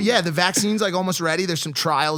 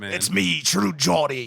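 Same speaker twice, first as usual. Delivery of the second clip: put-on pirate voice and accent. Doing the one accent the others tease about: pirate voice. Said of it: "It's Pirate Man".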